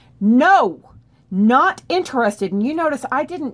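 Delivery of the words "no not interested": very firm, raised, shutting-down voice. Showing how to turn down someone who won't back off: firmest refusal. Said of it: "the firmest level is going to be".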